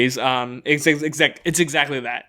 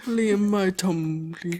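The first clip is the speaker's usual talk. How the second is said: cartoon bear voice, higher, quieter; 5 semitones higher, 4 dB quieter than usual. Taking turns with another speaker doing cartoon characters, in a Winnie the Pooh voice. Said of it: "There he is".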